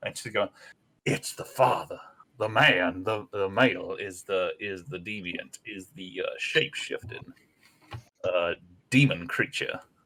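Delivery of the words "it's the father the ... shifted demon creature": hushed half-whisper, stage whisper. Voicing a brain creature that speaks into the players' minds: half-whispering into minds. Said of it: "whispers, like, into your brain".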